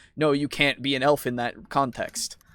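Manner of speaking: plain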